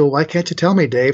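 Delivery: ordinary talk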